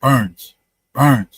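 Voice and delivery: low, half-whispered stage whisper, close and intimate. Retelling how she half-whispered his last name into his ear, imitating a half-whisper. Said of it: "She's whispering in my ear".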